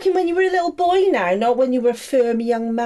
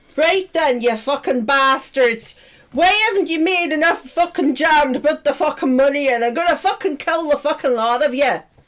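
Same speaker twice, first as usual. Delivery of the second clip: put-on Irish accent, swearing rant; 3 semitones higher than usual. Acting out the Irish head berating people around the table, Irish accent. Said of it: "begin with the Irish head".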